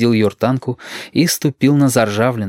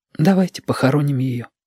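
whispered in a higher pitch; 3 semitones higher than usual. Looking at a dead little fish, a boy speaks to his companion in a whisper. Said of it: "шепотом сказал Йортанка".

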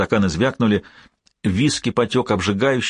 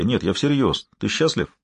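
ordinary delivery

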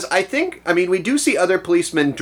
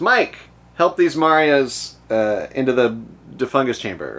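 normal talking voice

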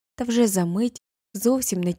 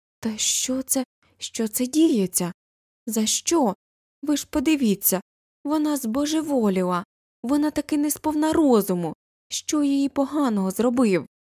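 high, flustered, ashamed, bewildered exclaiming outcry; 5 semitones higher than usual. Coffee dripping down him, a carpenter exclaims as the tables around fall silent, bewildered and ashamed. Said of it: "вигукував спантеличений та засоромлений столяр".

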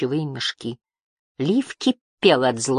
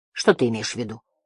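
ordinary delivery

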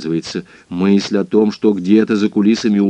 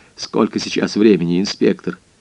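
plain

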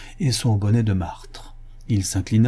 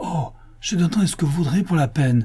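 high, eager, quick cried-out exclamation; 7 semitones higher than usual. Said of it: "s'écria le riche juif".

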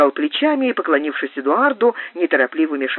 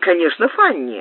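plain

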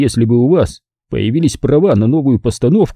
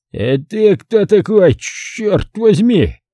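put-on surprised, astonished slurred speech, slower; 8 semitones higher than usual. Taig, lying on the bed after a scuffle, questions the narrator, surprised and slurring. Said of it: "удивился он".

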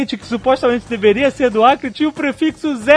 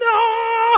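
desperate, high, piercing scream. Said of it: "só pode botar a mão na frente e gritar".

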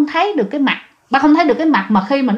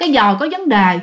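ordinary delivery

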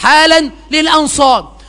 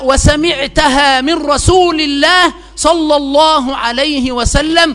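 plain

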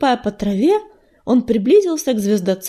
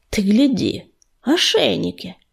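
contemptuous mutter through gritted teeth, lower and slower; 3 semitones lower than usual. A cat behind his leader, eyeing collared enemy cats, contemptuous through gritted teeth. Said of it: "презрительно процедил".

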